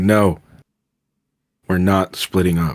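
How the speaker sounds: said in dead seriousness. In a role-play, a player's character turns to the group in a serious tone. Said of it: "I look at the group in a serious tone".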